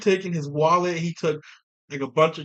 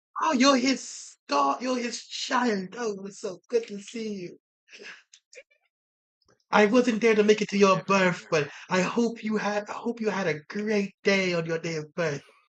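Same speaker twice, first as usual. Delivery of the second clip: put-on old lady voice, quieter; 4 semitones higher, 3 dB quieter than usual. Greeting someone's child in a scene, in an old lady voice. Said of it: "they're an old lady".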